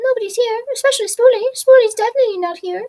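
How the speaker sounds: squeaky, very high, loud little voice. Caught hiding in the bushes, Spoolie claims not to be there; squeaky Spoolie voice. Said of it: "I know your squeaky voice anywhere".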